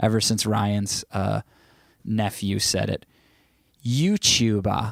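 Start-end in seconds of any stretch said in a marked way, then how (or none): 3.9-4.9 the word "youtuber" pronounced in a British accent. Sharing a favorite word to say, british accent on 'youtuber'. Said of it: "my favorite word to say in a British accent".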